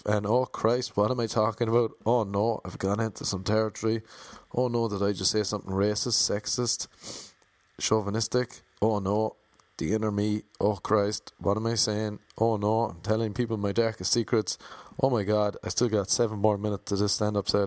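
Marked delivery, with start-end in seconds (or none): none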